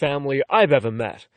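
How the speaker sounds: plain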